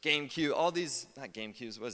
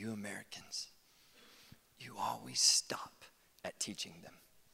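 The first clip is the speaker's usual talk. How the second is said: mock gentle voice, lower in pitch; 4 semitones lower, 5 dB quieter than usual. Quoting a man's words to American pastors, imitating someone speaking gently. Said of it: "very gently".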